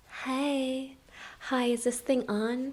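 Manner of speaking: very soft, hushed, high, slow little cat voice. Voicing the cat Ella greeting viewers: Ella's voice. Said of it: "Ella's voice is".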